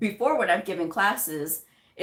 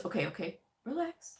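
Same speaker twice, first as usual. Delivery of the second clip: very soft, hushed, soothing, calm voice; 11 dB quieter than usual. Speaker retells their partner settling their nerves: imitating a calm voice. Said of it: "she was really good about like that calm voice".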